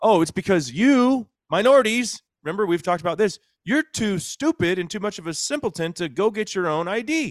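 very high, sarcastic, mocking tone. Mocking an argument about voter id laws: put-on facetious mocking. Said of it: "I know that you're always being facetious".

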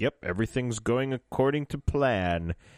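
ordinary delivery

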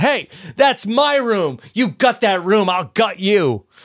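play-acted blurted half-yell, high and drawn-out. Retelling how a woman objected to knocking out her room: imitating Emma yelling. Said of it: "Emma yells out".

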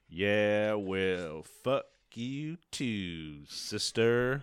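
put-on southern drawl, long drawn-out. Retelling a man's reply to an angry phone message, in a southern drawl. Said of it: "inexplicably in a southern drawl".

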